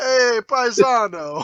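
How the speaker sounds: put-on loud, high, belted Italian accent. Showing how an attempted Rodney Dangerfield comes out: Rodney Dangerfield impression sounding Italian. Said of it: "it comes out as Italian".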